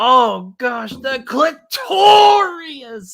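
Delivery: loud, shrill, stretched-out comic voice. Retelling a skit where Gilbert Gottfried reads Fifty Shades of Grey: Gilbert Gottfried voice. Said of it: "Gilbert Godfrey ... he goes".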